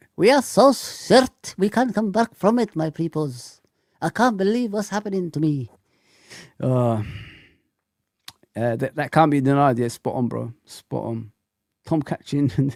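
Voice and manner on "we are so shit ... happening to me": put-on Arabic accent, pitched up. Imitating Husam complaining about being shit: imitating Husam's Arabic accent. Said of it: "with the Arabic accent".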